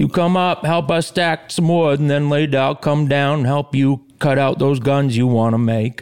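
put-on Boston accent, slowed way down and drawling. Speaker imitating how their grandfather sounded: slowed-down boston accent. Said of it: "a Boston accent slowed way down".

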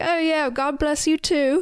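put-on little British accent, half laughing. Retelling a scene, voicing the man who laughs at her: british accent. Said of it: "In his little British accent".

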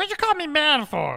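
very high, vile little goblin voice. Voicing a goblin who appears when summoned: goblin character voice. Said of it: "vile little goblin dressed like a fox".

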